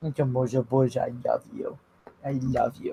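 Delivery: barely-there, very soft, hushed murmur. Cooing to a puppy after being told to murmur softly: murmuring softly. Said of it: "murmuring softly".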